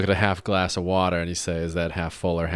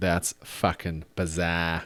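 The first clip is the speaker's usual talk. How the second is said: put-on Boston accent; 3 dB quieter than usual. Showing a favorite phrase to say: boston accent. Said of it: "with a Boston accent is".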